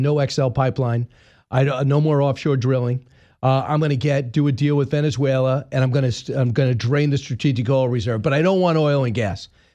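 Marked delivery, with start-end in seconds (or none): none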